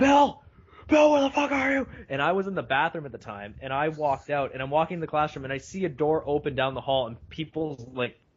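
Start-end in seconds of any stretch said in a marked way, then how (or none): 0.0-1.9 mock wild, loud screaming, pitched very high. Retelling classmates in an acting exercise: imitating classmates screaming.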